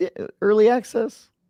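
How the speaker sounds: mock incredulous disbelief, high squeak.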